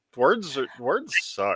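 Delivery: ordinary delivery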